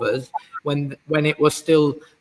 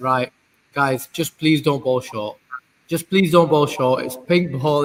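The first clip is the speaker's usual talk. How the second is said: put-on sarcastic, pleading tone. Retelling words said to self while watching a session: imitating own sarcastic plea. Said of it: "in a bit of a sarcastic way to myself".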